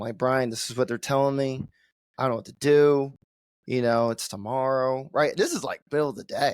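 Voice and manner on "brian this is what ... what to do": usual speaking voice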